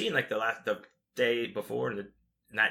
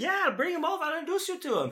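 high put-on Italian accent. Retelling a greeting from a band member: imitating an italian accent. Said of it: "he's got this Italian accent".

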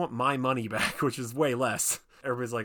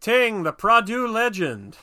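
very loud, high, drawn-out, slow belted delivery; 11 semitones higher, 10 dB louder than usual. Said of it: "Bruce Campbell in Spider-Man where he's like".

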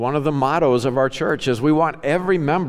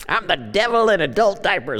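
put-on high, wicked elderly man voice; 5 semitones higher than usual. Acting out the listener at the end of life, old man voice. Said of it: "I'm you at the end of your life".

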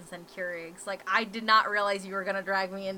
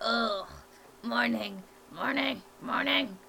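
put-on cranky, crusty old-man grumble; 3 semitones higher than usual. Describing how they are in the morning: crusty old grandpa voice. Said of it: "I'm like that really crusty old grandpa where I'm like".

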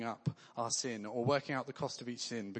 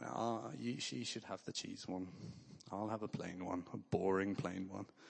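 play-acted woeful voice, low, soft and very sad; 5 semitones lower, 6 dB quieter than usual. Retelling what he said at a sausage stall queue, putting on a really sad voice. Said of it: "i said in a really sad voice".

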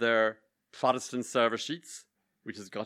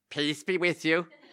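put-on half-harsh Belfast accent, pitched up; 5 semitones higher than usual. In church, a woman in the pew ahead holds out her hand, harsh Belfast accent. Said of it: "in her half harsh Belfast accent".

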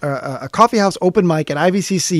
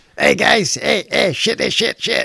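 slow, rough, gruff host voice; 4 semitones higher than usual. Acting out how people impersonate him: gruff voice imitating [name]. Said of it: "everyone's impersonation of me is bad words and a gruff voice".

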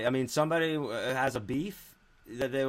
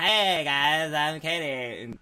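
unhurried, very slow, drawn-out delivery; 3 semitones higher than usual. Retelling what a wife said, imitating Katie's voice. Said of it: "that's exactly what she sounds like".

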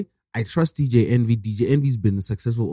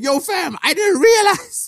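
very high, chummy voice. Describing how Envy would be talking: imitating Envy smiling. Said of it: "Envy would be talking like this, smiling".

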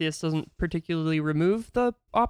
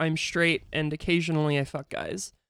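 ordinary talk

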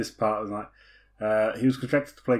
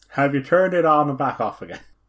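poor, put-on Irish accent; 2 semitones higher, 4 dB louder than usual. Joking about the standard IT fix, he asks in a bad Irish accent. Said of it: "That's a very bad Irish accent".

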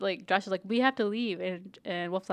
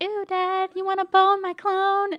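weird, very high, loud voice; 12 semitones higher, 7 dB louder than usual. Retelling a funny scene, quoting Tyann: Tyann's weird high-pitched voice. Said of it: "Tyann has this weird high-pitched voice".

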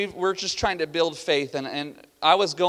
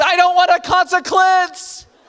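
put-on very high, all-out, full-lung child's yell; 13 semitones higher, 8 dB louder than usual. Recounting what he used to say when threatened with a consequence: retelling a yell at top of lungs. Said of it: "he'd yell at the top of his lungs".

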